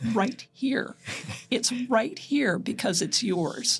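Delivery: secretive, confiding, conspiratorial tone. Retelling leaning down to answer a boy at the museum, conspiratorial voice. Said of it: "said in a conspiratorial voice".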